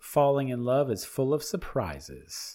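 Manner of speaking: ordinary talk, nothing marked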